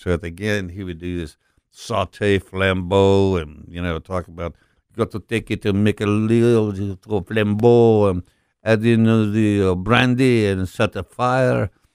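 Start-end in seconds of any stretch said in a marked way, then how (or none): 4.9-11.7 put-on speaking with a French accent. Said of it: "the way you say Beanie Weenies in a French accent".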